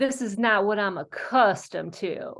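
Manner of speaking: put-on Southern US accent. Telling a joke the way the speaker's dad says it: Southern accent. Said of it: "in my dad's Southern accent".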